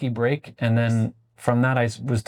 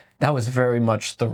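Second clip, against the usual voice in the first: normal talking voice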